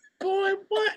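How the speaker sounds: very high-pitched voice. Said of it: "she's like".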